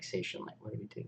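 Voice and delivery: mumbled under the breath. A player voices their character's reaction after a distant yell, muttered under breath. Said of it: "I sound like under my breath".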